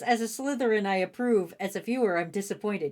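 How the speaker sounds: usual speaking voice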